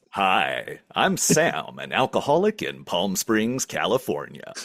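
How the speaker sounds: very low, deep radio announcer delivery. Host coaxing a tongue-tied caller to introduce himself, modeling it: announcer voice. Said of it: "got an announcer voice".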